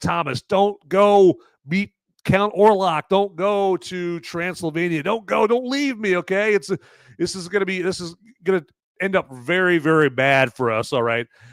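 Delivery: desperate begging. Retelling a movie scene where a wife begs her husband: imitating desperate begging. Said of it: "where she's begging, like".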